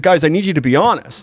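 usual speaking voice

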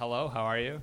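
put-on American accent. Asked to do an American accent, greeting someone: American accent. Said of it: "can you do an American accent?".

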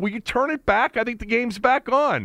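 shouted. Retelling yelling at his son to turn the game back on, retelling a yell. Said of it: "I yelled at Corbin".

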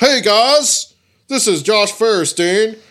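very loud, high, self-important wrestling announcer boom. Imitating a preacher YouTuber who sounds like he's in the WWE: Josh Firestein's booming voice. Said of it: "he kinda talks like this".

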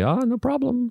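put-on lady voice, very high-pitched. Acting out the bagel seller's reply to a customer, in a lady voice. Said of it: "So just went kind of lady voice".

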